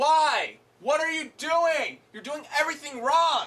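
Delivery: mock exasperated furious yelling, loud and high. Ranting about a show's cliffhanger ending, yelling angrily. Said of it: "I'm yelling at a Blu-ray".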